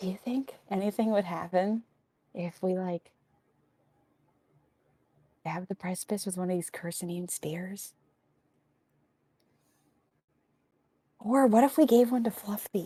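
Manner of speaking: barely audible, very quiet, close whisper. Voicing a character who sneaks up on another to ask: whispering really quietly. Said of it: "He's gonna whisper really quiet in her ear".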